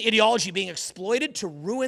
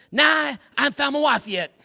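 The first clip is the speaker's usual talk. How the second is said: put-on slightly higher-pitched Southern accent; 6 semitones higher than usual. Retelling a chat with a guy from the rib store, Texas-Tennessee accent imitation. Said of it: "Talks like a classic, like Texas, Tennessee".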